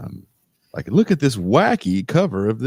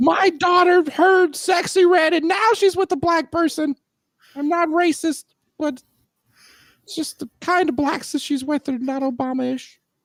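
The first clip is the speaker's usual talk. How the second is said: mock outraged voice, higher pitch. Doing a parody of an outraged Facebook poster: mock outraged voice. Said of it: "that outraged voice".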